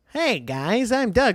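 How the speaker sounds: very high, very slow, drawn-out cartoon voice. Describing the cartoon's voice: high-pitched Doug voice. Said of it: "Doug's already high-pitched voice that goes like".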